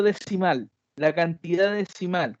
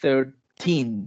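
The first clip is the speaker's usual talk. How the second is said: put-on thirteen with heavy stress on -teen; 6 semitones lower than usual. Lesson on english numbers: stress on teen in thirteen. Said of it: "con el acento en teen".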